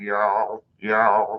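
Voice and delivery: low, gravelly "y'all", hard to understand. Reading chat, then saying the word like Gear does. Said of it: "if you put a bunch of gravel in your mouth or say it like Gear does".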